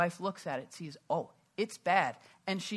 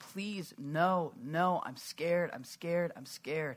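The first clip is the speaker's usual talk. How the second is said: mock crying, pleading and slower. Retelling how she begged before a shot to the face, imitating her crying. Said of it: "she's crying".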